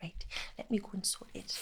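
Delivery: put-on slight Geordie accent, almost whispered, hushed. Quoting their drama teacher from year ten: slight Geordie accent. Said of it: "she had a slight Geordie accent".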